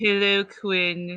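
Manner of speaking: very monotone, low voice. Recalling Quinn's friend from the show Daria, in a monotone low voice. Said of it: "very monotone, low voice".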